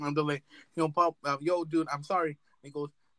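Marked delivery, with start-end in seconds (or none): none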